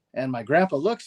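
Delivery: ordinary delivery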